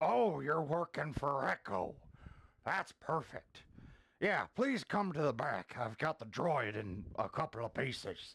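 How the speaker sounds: high-pitched pig creature voice. A burger-flipping alien pig talks to a customer: alien pig voice. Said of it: "alien-looking pig flipping burgers".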